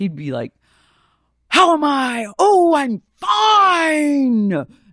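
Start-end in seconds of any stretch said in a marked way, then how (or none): 1.5-4.6 very high, very slow, stretched-out scream. Retelling how Al Pacino delivers any line in Heat: imitating Al Pacino yelling. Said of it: "you don't need to scream, Mister Al".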